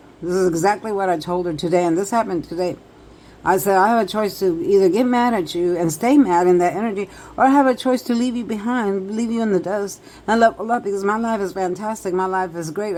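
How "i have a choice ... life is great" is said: ordinary delivery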